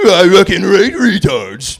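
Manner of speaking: loud, swooping cartoon dog voice. Offering the audience an impression of a cartoon dog at a comedy show: Scooby-Doo impression. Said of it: "my impression of Scooby Doo".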